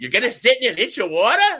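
loud, high-pitched voice. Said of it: "Sophia goes".

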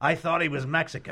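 put-on very loud, high-pitched elderly gentleman's voice. A speaker recounting an elderly audience member's remark to his companion, retelling a very loud remark. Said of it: "in a very loud voice".

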